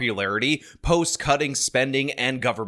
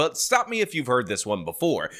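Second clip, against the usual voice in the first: plain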